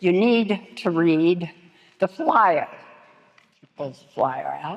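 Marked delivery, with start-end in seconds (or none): 0.0-2.7 raised, strident, forceful voice. Retelling getting upset with the trainee, in a louder, more strident voice. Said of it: "in a louder and more strident voice".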